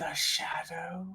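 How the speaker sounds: hushed whisper. Leaning in close to a character and asking a question: whispering. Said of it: "leans in close and whispers".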